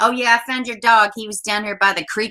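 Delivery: acted casual, breezy, offhand, unbothered tone. Retelling how a mother sounded about her son's murder: imitating an offhand, unbothered tone. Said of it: "that's how she was talking".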